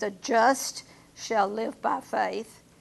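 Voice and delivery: slow, with heavy stress on JUST.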